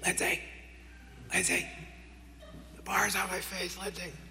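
loud stage whisper. Stuck with the bar on his face in a gym, calling his wife in a stage whisper. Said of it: "I'm stage whispering".

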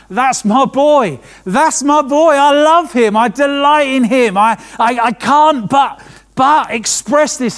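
slow, high, loud, heartfelt shout. Imagining God declaring love for his son from heaven: screaming out as God. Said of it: "screaming out".

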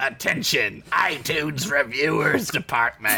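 evil, sinister, slithery snake-man voice. Invited to try an evil snake man voice, the speaker obliges, Cobra Commander voice. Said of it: "try on an evil, sinister snake man voice".

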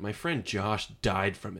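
grave, dead-serious, completely straight delivery. Retelling answering a woman who called the pandemic a hoax, dead serious. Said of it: "I said it dead serious".

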